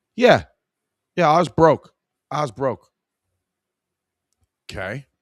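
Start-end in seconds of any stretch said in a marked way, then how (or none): 0.2-2.9 put-on poor Staten Island accent. Acting out a young man looking for a washing machine, worst Staten Island accent. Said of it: "worst Staten Island accent you've ever heard".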